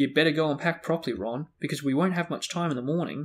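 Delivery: ordinary delivery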